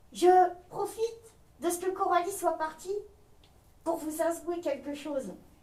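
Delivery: very quiet, high, confiding puppet voice chatter. A ventriloquist's puppet confides in the listeners, ventriloquist puppet voice. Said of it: "sa marionnette [name] (très bavarde et attachante !)".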